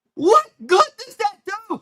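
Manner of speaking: high, whiny, ranting voice.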